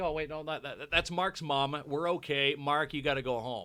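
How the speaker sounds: ordinary delivery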